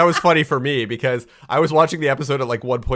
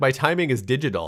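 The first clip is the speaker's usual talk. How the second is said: ordinary talk, nothing marked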